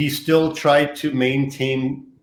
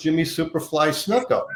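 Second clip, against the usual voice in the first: ordinary talk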